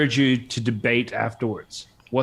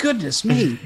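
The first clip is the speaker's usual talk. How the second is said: put-on very high, old-fashioned grandpa voice; 10 semitones higher than usual. Teasing a friend about sounding old, imitating Adam's inner grandpa. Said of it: "You're like".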